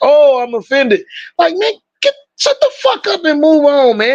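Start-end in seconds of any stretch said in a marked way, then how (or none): 0.0-1.0 play-acted scornful, sarcastic, put-upon offended tone. Mocking people who take offense: imitating someone offended. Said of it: "they're like".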